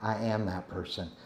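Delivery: half-whispered, breathy, soft and hushed. Leading the room in a spoken affirmation, half-whispered. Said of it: "I want you to whisper".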